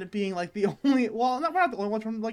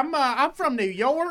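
put-on country accent, much higher, slower; 5 semitones higher, 4 dB louder than usual. Quoting what people from New York say, speaker tries an attempted country accent. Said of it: "supposed to be like a country accent".

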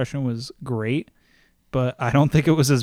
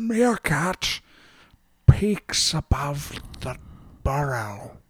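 nature-documentary narrator voice, pitched higher; 2 semitones higher than usual. In conversation, the speaker breaks into a David Attenborough impression. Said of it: "David Attenborough".

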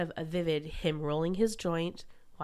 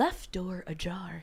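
imitated talking car voice. Recalling the family car that talked: imitating a talking car. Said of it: "my car is talking".

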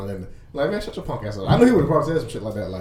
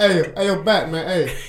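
very slow, dragged-out, drawn-out calling voice; 6 semitones higher than usual. Acting out how a friend would call out: imitating Gerard. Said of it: "I already know how Gerard would do that".

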